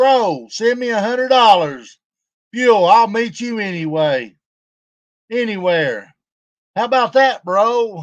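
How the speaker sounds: caving-in, backing-down conceding tone. Retelling what a man said, imitating him in his conceding voice. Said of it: "in his conceding voice".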